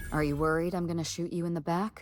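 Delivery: normal talking voice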